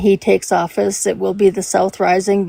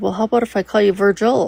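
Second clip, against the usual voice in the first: mock casual, unbothered, nonchalant, offhand tone. Retelling a college roommate's reply about the nickname: imitating a nonchalant roommate. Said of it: "she very nonchalantly said".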